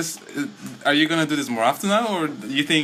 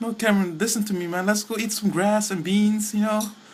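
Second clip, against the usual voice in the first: pitched-up, persuasive, coaxing buddy voice; 6 semitones higher than usual. Acting out vegetarian friends urging Cameron to eat grass: imitating vegetarian friends. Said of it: "What is this voice?".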